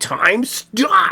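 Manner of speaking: put-on, breathy, strained, half-whispered yell. Retelling a movie clip where the actor yells to freeze time: imitating Adam Driver yelling. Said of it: "he yells".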